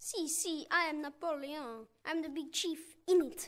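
put-on Italian accent in English. Welcomed on the show and asked if he is Napoleon, answering in an Italian accent. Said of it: "you sound kind of Italian".

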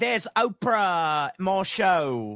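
put-on dopey Cockney accent, "show" drawn out. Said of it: "Do an [name] real quick".

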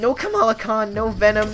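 voice cracking and breaking mid-word. Player pleading as the selection slows down, voice cracking. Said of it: "There's a voice crack".

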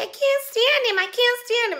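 very high character voice, pitched way up. Imitating a silent-film actress from Singin' in the Rain who talks like this. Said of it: "And she talks like this".

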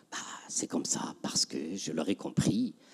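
resigned, hushed, unvoiced whisper.

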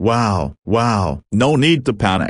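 ordinary delivery, nothing marked

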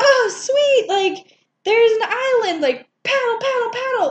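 put-on very high, thrilled, eager, excited chatter. Retelling a movie scene where she spots an island: imitating an excited character. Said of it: "she gets so excited".

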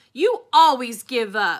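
very loud, full-voiced shout. Opal shouts back at the preacher. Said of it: "I shouted".

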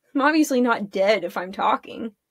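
ordinary delivery

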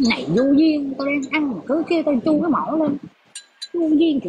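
high, whiny mock voice.

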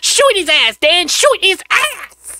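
very high, squealing, with pitch pushed way up. Reacting to a cartoon fight with his best ever Chris Tucker impression. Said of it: "In my best ever Chris Tucker impression".

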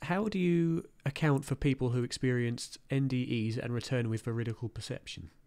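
ordinary talk

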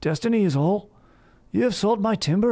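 very high, odd, condescending put-on accent. Quoting a show character after praising the show: imitating Uhtred's accent. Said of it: "his accent is so hilarious in that movie".

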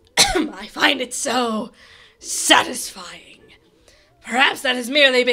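villainous, evil-sounding ghost voice. Playing a game, voicing the villain addressing the hero, King Boo voice. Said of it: "prepare my King Boo voice".

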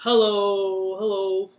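as low as possible. Leading a group in saying hello as low as they can, very low pitch. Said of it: "Let's say hello as low as we can".

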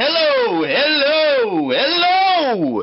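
very high, very loud, stretched out. Showing how a sound meter reacts to speech: talking really loud. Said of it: "if I start talking really loud".

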